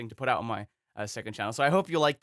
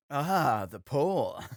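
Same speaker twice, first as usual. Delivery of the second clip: put-on odd line reading like an old dub; 3 semitones higher than usual. Repeating an old anime dub line to mock it: mocking Yamcha's dub delivery. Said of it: "what delivery is that?".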